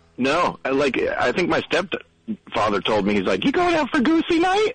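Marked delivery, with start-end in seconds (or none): 3.5-4.8 put-on high voice, much higher, faster. Retelling what their stepfather asked them about going out: imitating a high voice. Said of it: "Was his voice that high?".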